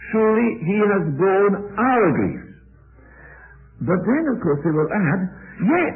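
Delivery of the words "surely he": emphasis on "surely" and "he". Explaining how a verse is read, with stress on surely and he. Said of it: "the emphasis is on the word surely and on the word he".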